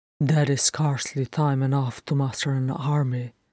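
ordinary delivery

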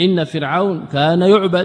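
normal talking voice

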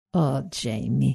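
tender, very soft, low murmur. The narrator answers a feverish man at her side; murmured.

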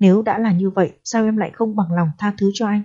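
ordinary talk

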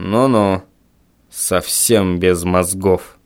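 very low, slow, drawn-out grumbling. Reading a father's remark to his son before shuffling off, grumbling. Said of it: "проворчал отец".

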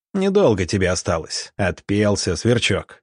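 ordinary talk

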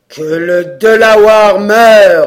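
very loud, slow, thundering roar. The speaker answers the eldest assistant's question about an enemy: thundering voice. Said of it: "cria Magua d'une voix tonnante".

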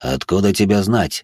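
ordinary delivery, nothing marked

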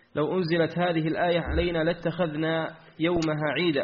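ordinary talk, nothing marked

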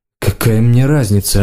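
usual speaking voice

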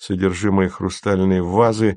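ordinary delivery

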